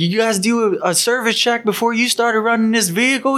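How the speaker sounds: high, furious yelling. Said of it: "He's yelling".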